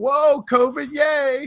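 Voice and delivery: high, loud, smug, gloating cheer. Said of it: "with smug face on going".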